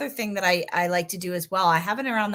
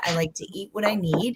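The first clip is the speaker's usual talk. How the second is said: ordinary talk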